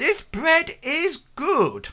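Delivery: very high, muffled, dampened voice. Telling a story, someone behind the curtains takes the bread and speaks, muffled voice. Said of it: "a muffled voice sort of like saying".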